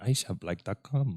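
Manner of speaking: put-on slow, foreign-sounding ad announcer accent. Asking where the ad voice is from, imitating the ad voice's foreign-sounding accent. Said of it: "It sounds like it's from another country".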